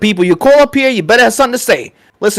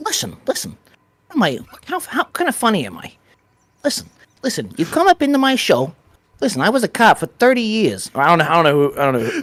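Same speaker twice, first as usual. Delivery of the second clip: swooping, gangster-style Boston accent, laid on thick; 2 semitones lower, 7 dB quieter than usual. Host showing how his Boston accent comes out, Boston accent like Joe Pesci. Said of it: "every time that I do a Boston accent, I sound like Joe Pesci".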